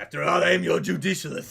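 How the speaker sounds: loud, rough, rasping character voice. Asking the chat to do their bidding: Barok van Zieks voice. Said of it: "It's a good impression".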